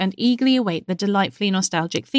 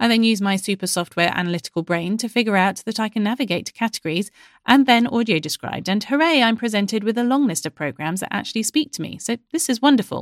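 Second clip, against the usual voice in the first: normal talking voice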